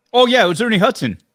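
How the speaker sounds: thrilled outburst, very high-pitched and very loud. Naming the voice actor when asked who voiced him: excited. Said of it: "I can hear the excitement in your voice".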